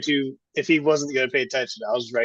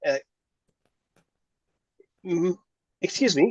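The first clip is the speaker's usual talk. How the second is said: slow, pitched-up hem and throat clear; 5 semitones higher, 4 dB quieter than usual. Voicing Das interrupting: clearing throat before speaking. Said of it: "Das would clear his throat like that as well".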